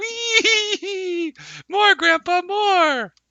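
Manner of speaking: put-on very high, slow, drawn-out cute baby voice. Voicing a toddler dwarf riding on his grandfather's back: cute toddler dwarf voice. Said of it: "the toddler dwarf is making very cute noises".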